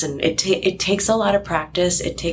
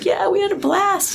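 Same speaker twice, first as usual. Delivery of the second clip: very high voice, cracking up laughing. Retelling how Colin answered while cracking up: imitating Colin laughing while talking. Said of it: "just laughing".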